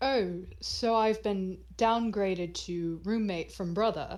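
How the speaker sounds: very smug, self-satisfied tone. A character's voice suddenly comes up in the scene, very smug. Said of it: "you in particular hear a very smug voice come up".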